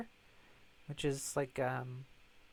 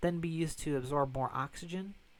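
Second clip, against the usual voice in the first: ordinary talk, nothing marked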